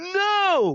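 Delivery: very high, drawn-out no. Retelling a friend's denial: imitating raised voice. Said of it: "he raises his voice and is like".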